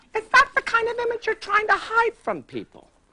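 very high, loud, rising voice. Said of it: "I hear your voice go up, real high, then go down".

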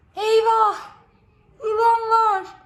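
high, loud, startled, frightened shout. Narrating a children's story, Arni's line in the forest, shouting. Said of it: "Diye bağırdı Arni".

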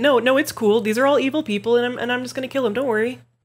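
acted flat, unbothered tone. Imitating a character from a game story: imitating a deadpan character. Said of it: "she's very deadpan and matter-of-fact about it".

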